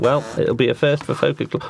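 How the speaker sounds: ordinary talk, nothing marked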